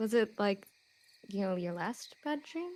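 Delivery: very soft, hushed, barely audible half-whisper. In a roleplay, [name] walks over to Amira and asks her, in a half-whisper. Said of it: "kind of like in a whisper".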